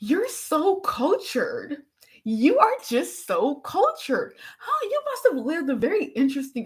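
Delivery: swooping, sarcastic, mock-admiring tone. Recounting a talk with a man, the speaker repeats their own sarcastic praise. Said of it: "the sarcasm in my voice".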